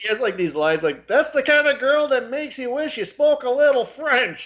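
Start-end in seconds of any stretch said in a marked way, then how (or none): 1.1-4.5 mock, very high, shrill, full-throated scream. Quoting a line he screams at the double r, retelling a scream. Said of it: "he's just screaming this at the double R".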